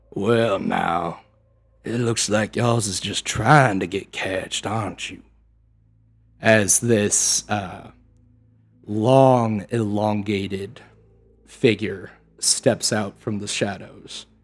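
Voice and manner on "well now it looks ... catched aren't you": amphibian swamp creature monster voice. Voicing a creature speaking from the dark of a swamp: voicing a swamp creature. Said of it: "and he will say".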